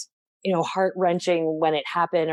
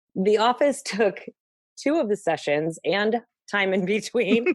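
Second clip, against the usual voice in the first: self-amused, laughing through the line; 4 semitones higher than usual. Speaker recalling a past session to the listener, laughing at oneself. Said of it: "I'm laughing at myself".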